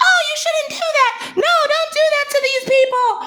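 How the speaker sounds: very high, put-on whiny voice. Doing a mocking impression of women whining, in a put-on whining voice. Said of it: "It's the fucking whining voice".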